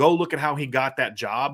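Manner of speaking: ordinary talk, nothing marked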